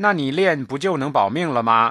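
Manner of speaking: ordinary delivery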